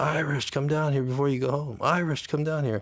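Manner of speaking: play-acted high calling yell. Retelling how an inmate called out from his cell: imitating Charlie yelling. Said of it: "he's yelling at me one time".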